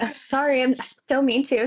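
put-on whisper. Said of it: "why are you whispering?".

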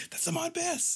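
acted, very high, hyped-up, excited voice. Retelling own reaction to spotting an actor on screen: imitating own hyped-up self. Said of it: "all hyped up".

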